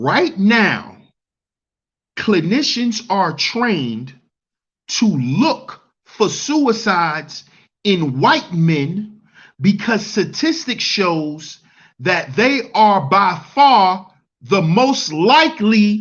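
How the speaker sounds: slow, deliberate, drawn-out reading aloud word by word. Reading a statistic aloud so listeners can hear it clearly: reading slowly. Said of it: "let me read this slow so y'all can hear this".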